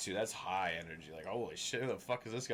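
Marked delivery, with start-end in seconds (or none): none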